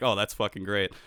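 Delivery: plain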